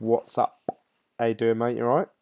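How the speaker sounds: plain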